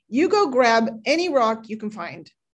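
harsh, stern voice. Telling a folk tale, God answers the latecomer trees in a harsh voice. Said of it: "he said in a harsh voice".

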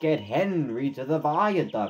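ordinary delivery

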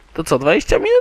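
high, fast questioning voice. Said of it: "Dwadzieścia minut wystarczy".

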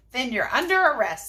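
ordinary talk

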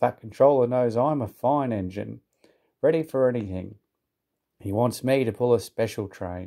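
usual speaking voice

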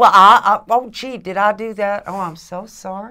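acted innocent tone in a Southern accent. Mocking a politician's innocent denial: Jeff Sessions impression, Southern accent. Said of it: "Southern accent".

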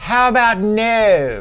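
campy supervillain voice. Speaker recalls balking at a steep bear-spray price tag, doing a Dr. Evil impression. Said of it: "I did my best Dr. Evil impersonation".

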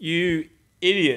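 very high, loud scolding tone. Retelling being called an idiot after a mistake, mock scolding. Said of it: "because it's that, that tone".

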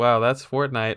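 ordinary talk, nothing marked

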